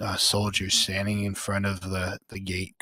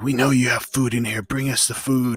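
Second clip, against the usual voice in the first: loud, hostile shouted voice; 4 semitones higher, 7 dB louder than usual. Describing a crowd scene to two listeners, voicing one yelling crowd member. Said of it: "individual people who are yelling things like".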